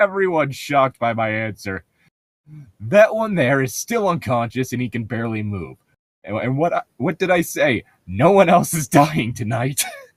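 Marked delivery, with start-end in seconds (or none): 8.1-9.8 through gritted teeth, much higher pitch. Role-player's character answers shocked companions, speaking through gritted teeth. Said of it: "I say through gritted teeth".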